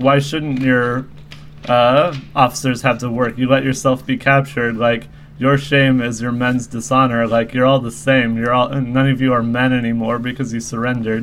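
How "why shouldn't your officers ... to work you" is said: usual speaking voice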